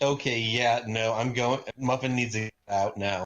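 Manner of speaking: normal talking voice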